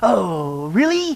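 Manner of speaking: mock-impressed sarcasm, muttered under the breath. Telling a joke, the hairdresser replies to the lady with sarcastic muttering. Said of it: "The hairdresser muttered sarcastically".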